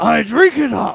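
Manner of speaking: very high, very loud, rough, booming dad voice, slow, rasping. Joking with friends on a podcast: impression of the listener's dad. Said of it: "that was my impression of your dad".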